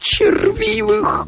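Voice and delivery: shrill squeal. Priz, just corrected by Carmody, retorts with a squeal. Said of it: "взвизгнул Приз".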